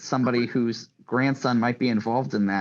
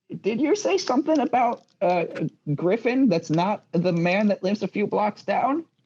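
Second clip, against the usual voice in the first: put-on little old lady voice, pitched up; 8 semitones higher than usual. Game narrator voices a woman who stops the players: little old woman voice. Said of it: "you do get stopped by a littler old woman though, who's like".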